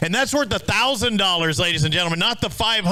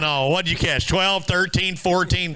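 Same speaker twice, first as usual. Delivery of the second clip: usual speaking voice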